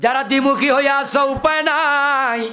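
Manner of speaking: fiery preacher-style voice, loud, high, thundering.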